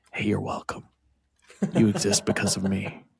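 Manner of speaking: hushed, sly, secretive whisper. Acting out a line to a grown child of a matched couple: acting out a whisper. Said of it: "whisper in their ear".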